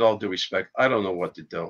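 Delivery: ordinary talk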